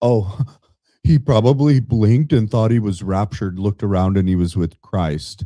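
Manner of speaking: mocking, scornful delivery. Retelling what she said about the death: mocking imitation of her joke. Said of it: "How is she telling a joke".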